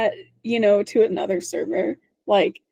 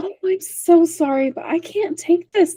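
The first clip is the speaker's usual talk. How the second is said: put-on extremely polite voice, higher; 8 semitones higher than usual. Imitating Bridget turning down a bedroom: imitating Bridget, nicest way possible. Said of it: "You just do it in the nicest way possible".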